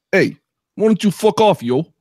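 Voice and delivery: put-on Brooklyn accent. Doing accents on request, the speaker answers Brooklyn with a put-on Brooklyn accent.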